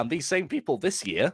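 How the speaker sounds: voice cracks high in mid-phrase. Complaining about critics of the team's narrow wins, voice crack. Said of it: "sorry for the voice crack".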